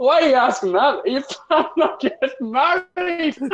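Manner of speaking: high-pitched, laughing mock shout. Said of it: "The other guy just shouts".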